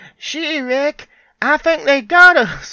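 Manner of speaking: very high, very loud, belted character voice. Player recounts a game character turning around to speak, in the Marty voice. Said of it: "in the Marty voice".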